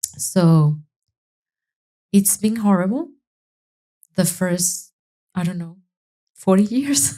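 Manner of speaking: on the verge of crying, holding back tears. Asked what life with ADHD has been like, she answers, holding back tears. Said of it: "I'm gonna cry".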